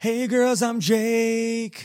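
flirtatious, high-pitched mock voice.

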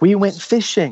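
mock excited high childlike cry, toned down. Retelling what a group of kids screamed, imitating kids screaming. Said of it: "and they're screaming".

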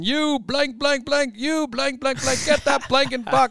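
very high, shrill yelling, words bleeped out. Retelling being yelled at during a first game: imitating Joe Watson yelling. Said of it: "Joe Watson yelling at me".

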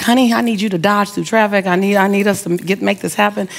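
ordinary talk, nothing marked

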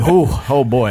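usual speaking voice

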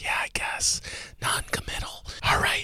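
whispered voice. Answering a co-host's comment on a review, whispering. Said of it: "I'm gonna stop whispering in three".

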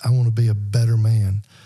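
normal talking voice

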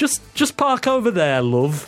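put-on high-pitched northern English woman's accent. Describing a guide voice heard at a tech place, northern English lady accent.

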